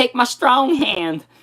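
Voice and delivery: goofy character voice. Retelling a favorite comedy scene, imitating Chris's quirky character. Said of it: "I'm already getting into character".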